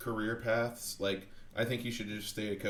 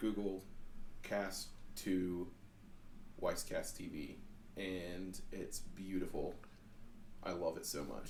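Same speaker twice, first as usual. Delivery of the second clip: growing much quieter, soft and lower; 3 semitones lower, 8 dB quieter than usual. Describing casting to the TV by voice command, the speaker keeps getting quieter. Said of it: "I'm sorry I'm getting quieter".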